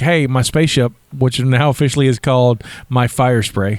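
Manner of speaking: ordinary talk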